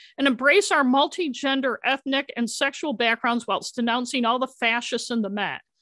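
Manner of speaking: normal talking voice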